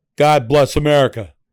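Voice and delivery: loud, blunt, commanding tone. Showing how a phrase can sound like a command, as a blunt commanding order. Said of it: "Like an order, like you're ordering me".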